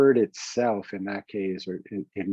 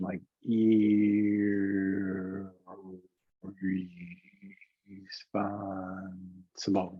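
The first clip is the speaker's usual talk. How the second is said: word stretched out very slowly, like slow motion. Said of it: "it's in slow motion".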